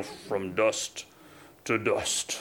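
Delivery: deep, low, soft gravelly voice. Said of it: "really deep, gravelly voice".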